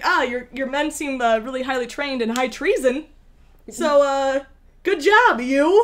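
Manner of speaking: very sassy tone.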